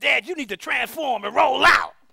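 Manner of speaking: play-acted kid voice, high, raspy, rough shout. Retelling what a son called out in the bathroom: imitating a child yelling. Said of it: "Mike yells out".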